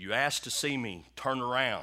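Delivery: mock loud, powerful, big booming voice. Retelling a man hearing a voice while lying in bed, big booming voice. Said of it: "I hear this big booming voice says".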